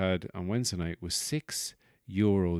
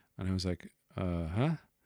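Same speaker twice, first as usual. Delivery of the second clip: ordinary talk, nothing marked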